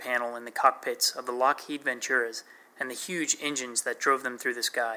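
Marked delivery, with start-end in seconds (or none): none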